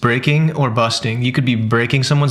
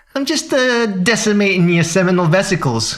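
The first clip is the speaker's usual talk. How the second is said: thick, heavy, laid-on Brooklyn accent, pitched up; 7 semitones higher than usual. Trying the phrase again to test how it sounds: Brooklyn accent. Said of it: "with the Brooklyn accent".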